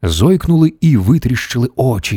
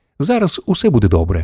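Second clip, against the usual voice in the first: ordinary delivery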